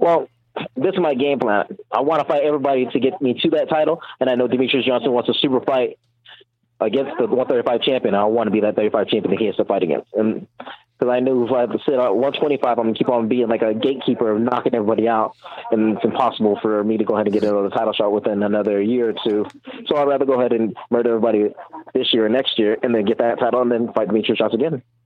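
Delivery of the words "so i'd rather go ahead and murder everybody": rapid, rattled-off speech. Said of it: "You talk as fight as you, as fast as you fight".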